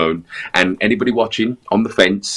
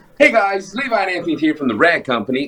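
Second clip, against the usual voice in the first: put-on American accent, pitched very high; 9 semitones higher than usual. Asked to have a go at one, speaker greets viewers in an American accent. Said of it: "Have a go at an American accent".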